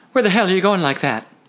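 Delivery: suspicious demanding tone. As he heads for the door, the narrator demands, suspicious. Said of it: "I demanded, suspicious".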